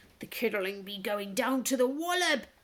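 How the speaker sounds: hissing, sibilant creature voice. Narrator reading figures in a doorway speaking as Lucy vanishes, hissing. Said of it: "they hissed".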